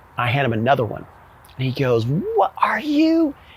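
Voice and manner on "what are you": very high-pitched, shrieking, angry screaming. Retelling how the company commander reacted to another chit: imitating someone screaming. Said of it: "he's screaming".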